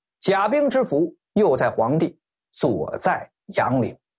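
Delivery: ordinary talk, nothing marked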